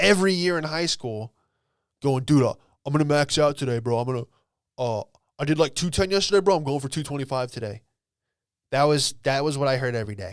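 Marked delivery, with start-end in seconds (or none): 2.2-7.8 dopey, dumb meathead gym bro voice. Retelling what a high school classmate said every day: imitating a dumb classmate. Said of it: "moron that sat next to me in English class".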